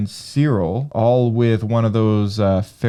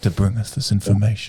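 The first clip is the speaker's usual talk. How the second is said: put-on sinister villain voice; 2 semitones lower than usual. Describing a frozen Star Wars frame with a caption, Darth Maul voice. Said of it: "said that in the Darth Maul voice".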